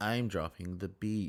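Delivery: mock dull, deadpan, low, flat monotone. Imitating a reality star's line with a monotone delivery: imitating a monotone delivery. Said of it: "so monotone and just so, like, almost dull".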